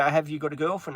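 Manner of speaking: ordinary delivery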